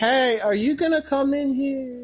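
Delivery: distant, fading voice. Voicing a distant figure calling the players in: distant call trailing off. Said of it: "very distantly".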